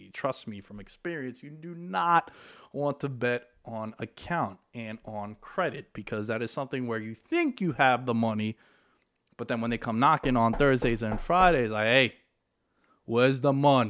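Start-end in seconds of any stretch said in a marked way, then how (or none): 11.9-13.9 put-on Italian accent. Speaker acts out people coming to collect betting money, in an Italian accent impression. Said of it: "I'm doing my best Italian impersonation".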